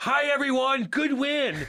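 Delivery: shrill, booming, very high, loud, slow, drawn-out voice. Imagining Andy greeting players in the locker room: imitating Andy. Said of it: "Andy would be like this".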